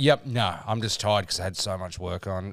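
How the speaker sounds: ordinary talk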